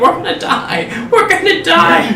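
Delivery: high, panicked wail with laughter.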